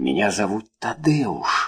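in a hushed whisper. A man answers the woman who has just recognized him, whispering. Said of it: "прошептал он".

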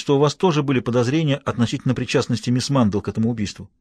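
ordinary talk

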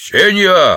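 short, curt, barked. Narrator reads one of the domino players calling to a woman, barked. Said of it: "рявкнул один из игроков".

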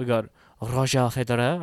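put-on French accent. Listing tennis seedings, the speaker names the third seed in a put-on French accent. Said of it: "I put a French accent for Roger Federer".

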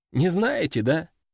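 plain

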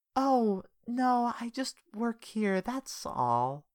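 airy, breathy, very high-pitched, slow and drawn-out. Reading a story aloud, a woman answering a man: breathy voice. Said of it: "she said in a breathy voice".

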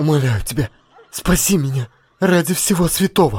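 high, frightened, shaky, trembling voice. Narrator reads a frightened young man begging Gaso for help, trembling voice. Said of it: "он обратился к Гасо дрожащим голосом".

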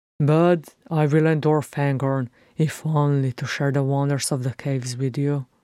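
ordinary delivery

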